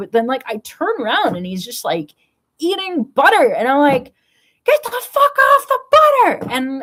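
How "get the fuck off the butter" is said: frazzled, shrill, high-pitched scream. Retelling screaming at their bird caught eating butter, retelling a scream at a bird. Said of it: "I'm screaming at my bird".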